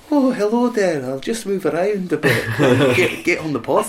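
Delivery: put-on Scottish accent from Edinburgh. Imitating the Scotsman in the house for the podcast, Edinburgh accent. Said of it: "Edinburgh accent".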